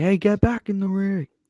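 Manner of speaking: yelling. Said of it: "the referee just yelling at them".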